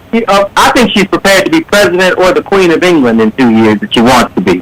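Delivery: ordinary talk, nothing marked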